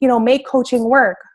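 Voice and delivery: ordinary talk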